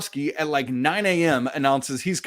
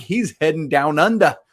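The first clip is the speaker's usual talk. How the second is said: clumsy, bad put-on Australian accent. Talking basketball recruits with a co-host, in a bad Australian accent. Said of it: "Was that, was that Australian?".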